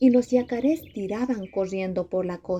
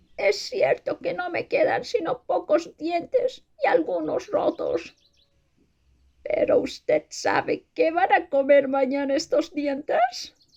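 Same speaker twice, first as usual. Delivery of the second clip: put-on old caiman voice, pitched up; 9 semitones higher than usual. Narrator reading the story, the old caiman answers the mocking officer: old caiman character voice. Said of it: "El viejo yacaré dijo entonces: / como ese viejísimo yacaré que veo allí y que no tiene sino 2 dientes en los costados de la boca. El viejo y sabio yacaré, / El viejo yacaré dijo entonces".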